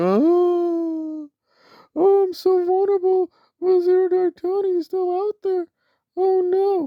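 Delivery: put-on drawn-out whining. Retelling a person's reaction to the police, mock whining, imitating someone. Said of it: "she's whining, moaning".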